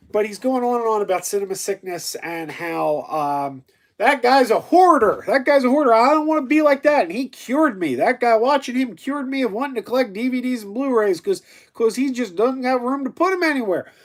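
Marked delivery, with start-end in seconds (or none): 3.9-7.0 thick, bad Kentucky accent, loud and high-pitched. Speaker quoting a man going on about Cinema Sickness, in a bad thick Kentucky accent. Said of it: "doing this thick Kentucky accent".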